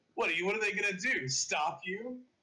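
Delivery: sarcastic, taunting tone.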